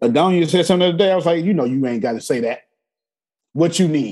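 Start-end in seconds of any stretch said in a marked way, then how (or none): none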